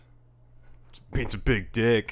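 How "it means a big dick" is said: loud yelling. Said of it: "he just yells".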